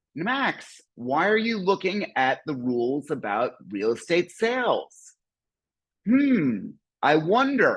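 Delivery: heavy, obvious sarcasm, slow and swooping. Asking a neighbor who clicked a link on the rules: overt sarcasm. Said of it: "this is overt sarcasm".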